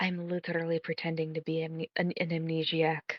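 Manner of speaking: soft, very quiet half-whisper, close to the mic. Voicing Xanth leaning in to another character's ear: half-whispering in character. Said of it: "just whisper in your ear".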